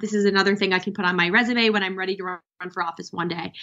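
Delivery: ordinary talk, nothing marked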